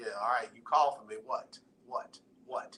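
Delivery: deep, low voice that sounds troubled. Imitating how a caller sounds when calling in: deep voice. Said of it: "with this deep voice".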